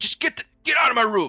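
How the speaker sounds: angry shouting. A game narrator voices a packing character who snaps at the players: angry yelling. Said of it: "And he's yelling".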